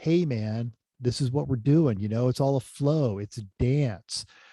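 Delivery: full-tilt, exaggerated, put-on hippie voice. Speaker showing how he sets up those folks, in a full tilt hippie voice. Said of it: "I go full tilt hippie".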